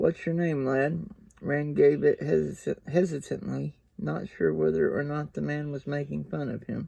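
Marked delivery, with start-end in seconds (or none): none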